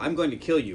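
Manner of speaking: ordinary delivery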